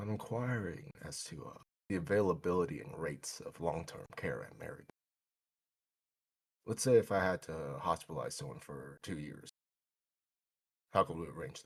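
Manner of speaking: hushed voice, barely above a half-whisper. A man on the phone asks a nurse about long-term care, almost half-whispering. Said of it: "almost whispering to the nurse".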